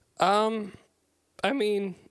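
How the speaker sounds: cracked voice, breaking up high. Starting to answer a question about a film scene: voice cracking. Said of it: "I don't know why my voice just cracked".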